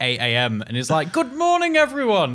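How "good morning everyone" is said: very high-pitched voice. Imitating a friend who greets the Discord early: imitating Haz's voice. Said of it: "That's how Haz speaks".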